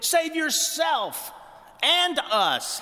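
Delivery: very high, drawn-out, haughty, condescending tone. Speaking of the thieves crucified beside Jesus, speaker quotes one thief: mock-demanding. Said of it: "he demands".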